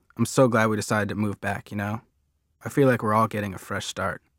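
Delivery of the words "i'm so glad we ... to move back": usual speaking voice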